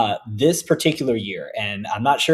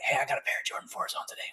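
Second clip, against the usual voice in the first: fast, hushed whisper. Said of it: "You don't have to whisper".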